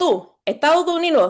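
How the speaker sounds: very high, clumsy, badly done thick Cuban accent. Retelling what a woman said to them, voicing her in a bad thick cuban accent. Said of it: "I'm I'm doing it really badly".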